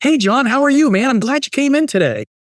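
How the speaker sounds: very high, excited, eager salesperson voice. Explaining how salespeople sound, imitating one greeting someone: excited salesperson voice. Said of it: "their voice goes up like an octave and they talk really fast and they're excited".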